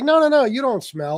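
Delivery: high, hasty, terrified woman's voice. Retelling a woman's reply to a stranger who asks if he smells: imitating a terrified woman. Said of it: "this poor woman who is terrified".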